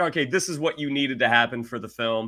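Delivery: plain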